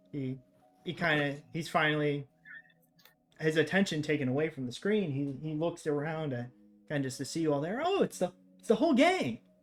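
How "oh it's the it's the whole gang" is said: creepily delighted, eerily gleeful, very high voice. Voicing a character turning to face the group, in an eerily gleeful voice. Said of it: "in an eerily gleeful voice".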